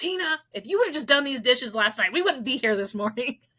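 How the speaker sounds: high yelling voice. Acting out what she says to her past self: acting out yelling at herself. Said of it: "I'm always yelling".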